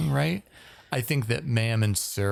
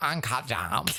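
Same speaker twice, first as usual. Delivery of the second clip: put-on Valley Girl accent and pronunciation; 4 dB quieter than usual. The speaker mimics how a woman pronounces 'gems': Valley Girl pronunciation. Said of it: "this pronunciation of gems".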